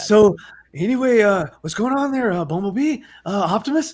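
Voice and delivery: put-on weary, tired-sounding voice. Mocking the terrible movie dialogue: Mark Wahlberg sounding exhausted. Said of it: "Mark Wahlberg is exhausted in his own movie".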